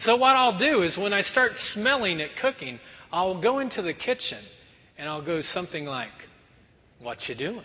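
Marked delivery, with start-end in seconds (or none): 7.0-7.6 close, cozy, intimate tone. Retelling walking into the kitchen while cookies bake: imitating own intimate tone. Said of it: "kind of an intimate way there".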